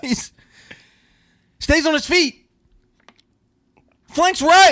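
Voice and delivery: shouting play-by-play. Calling a made-up football play as commentator: screaming play-by-play call. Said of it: "Why are you screaming?".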